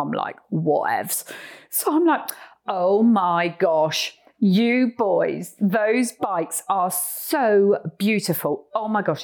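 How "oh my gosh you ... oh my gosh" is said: slow, put-on British accent, best attempt. Retelling greeting the guys on motorbikes, in a put-on British accent. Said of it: "in my best British accent".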